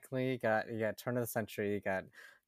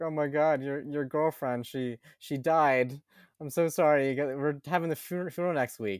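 acted, tearful, broken-up sobbing with stammering; 4 semitones higher, 3 dB louder than usual. Retelling a film's plot, acting out a caller: imitating someone crying. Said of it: "this guy that's just crying on the phone".

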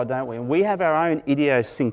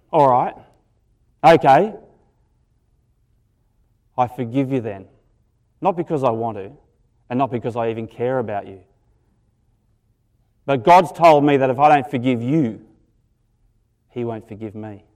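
loud, put-on angry voice, grudging in tone; 2 semitones lower, 6 dB louder than usual. Acting out grudgingly forgiving someone who keeps apologizing: mock angry. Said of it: "I'm trying to put my really angry face on".

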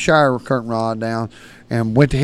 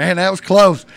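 put-on giggling through the words, pitched up; 7 semitones higher, 4 dB louder than usual. Retelling hiding behind a door, imitating laughing while talking. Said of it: "I'm giggling, I'm laughing".

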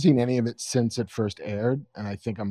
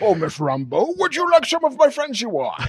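very high, loud voice, swooping in pitch; 13 semitones higher, 6 dB louder than usual. Riffing on a show trailer, doing the Adrian Veidt voice. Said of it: "we basically just do the fucking Adrian Veidt voice".

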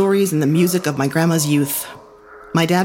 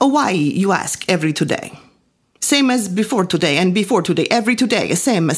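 put-on thick Italian accent. Recalling asking Lou about work every day, answering as him in a thick Italian accent. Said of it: "His Italian accent was so thick".

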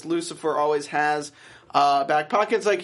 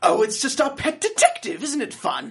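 very evil put-on British accent, pitched up; 8 semitones higher than usual. Speaker quotes a character from the episode, in a mock-evil British accent. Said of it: "It's like a very evil British accent".

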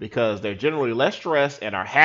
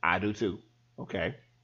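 usual speaking voice

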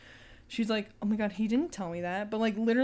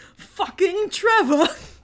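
imitated furious yell with overly British sound; 10 semitones higher, 11 dB louder than usual. Retelling a scene where a character kicks down a door: imitating a furious shout, too British. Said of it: "you sounded too British".

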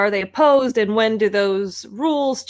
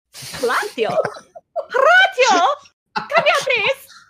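goofy, high, swooping put-on silly character voice; 13 semitones higher than usual. In a roleplay, calling Horatio to come over, in a put-on character voice. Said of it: "This is my character voice now".

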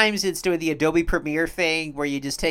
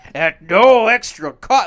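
mock salesman voice, higher and louder; 4 semitones higher, 11 dB louder than usual. Joking about Santa's free healthcare: mock sales pitch voice. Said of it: "like as if he was selling something".

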